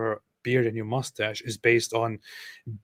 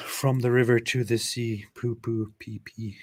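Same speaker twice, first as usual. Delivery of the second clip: put-on French-accented delivery. Repeating a joke line to the other speaker; french accent. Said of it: "That's also perfect in a French accent".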